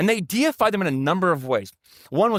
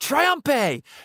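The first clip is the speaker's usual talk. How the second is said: loud crowd-like shouting. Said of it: "the people would shout".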